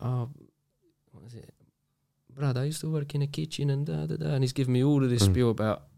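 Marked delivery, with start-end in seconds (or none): 0.0-4.3 soft, slow, unhurried put-on Italian accent. Recalling a man who told them a story: imitating an Italian accent. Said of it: "he had an Italian accent".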